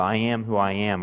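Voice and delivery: plain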